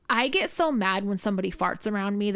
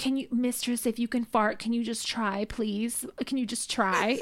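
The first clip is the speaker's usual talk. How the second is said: small, pathetic, pitiful pleading voice; 2 semitones higher than usual. Retelling how he always slips in his request, imitating his pathetic little voice. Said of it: "In this, like, pathetic little voice".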